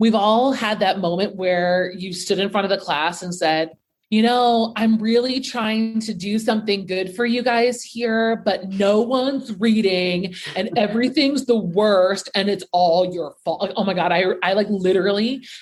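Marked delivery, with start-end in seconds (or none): 4.2-13.7 sarcastic, mocking, lecturing teacher-style speech. A teacher recalling the speech they gave their class, mock-retelling it. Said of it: "I say it with such a mocking tone".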